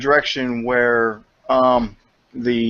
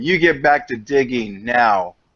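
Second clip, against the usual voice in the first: guttural, throaty, stern voice. Voicing a character who orders the others back to digging, guttural, stern voice. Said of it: "make my voice more guttural and more like stern".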